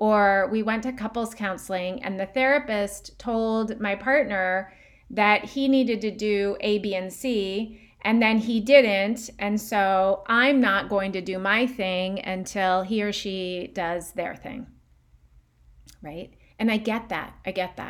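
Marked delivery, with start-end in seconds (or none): none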